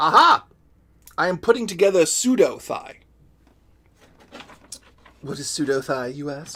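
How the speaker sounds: put-on loud, grand, posh British accent. Narrating aloud what the speaker is putting together, in a Stewie voice. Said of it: "I'm saying this like Stewie".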